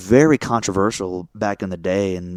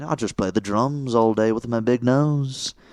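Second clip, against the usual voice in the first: low-pitched voice pushed into the nose; 4 semitones higher than usual. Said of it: "a bit of more of a deeper voice and, get it in the nose".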